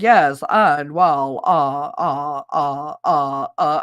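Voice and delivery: low, very slow, stalled stammer, stuck on uh. Imitating McConnell stuck mid-sentence: imitating McConnell stalling. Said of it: "He's standing there talking. It's like someone just flipped the switch".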